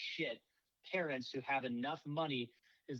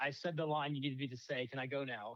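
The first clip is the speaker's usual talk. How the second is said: ordinary talk, nothing marked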